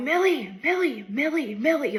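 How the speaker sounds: high yelling of a name, over and over. Retelling searching for a girl who vanished near a pool of water, yelling her name. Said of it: "I start yelling again".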